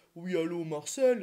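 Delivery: grave, deep, low voice. Speaker mimicking wrong-number callers asking for Marcel: deep caller voice. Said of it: "souvent c'est des personnes avec la voix grave".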